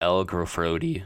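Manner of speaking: voice cracking. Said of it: "Voice crack".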